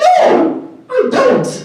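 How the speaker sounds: very high-pitched little voice. Retelling own answer to pushy salespeople: retelling own reply in high voice. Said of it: "And I'd be talking a high voice".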